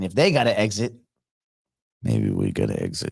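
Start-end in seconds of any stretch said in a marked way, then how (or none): 2.0-3.1 very low, sinister, creepy voice. Going over the news, the host slips into a creepy voice. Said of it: "that creepy voice I use".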